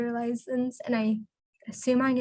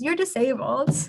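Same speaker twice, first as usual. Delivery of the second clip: deadpan, plain delivery, no joking tone; 3 dB louder than usual. Retelling what a twin sister once said: imitating a deadpan remark. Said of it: "she deadpan looked at me and goes".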